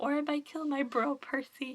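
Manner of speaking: plain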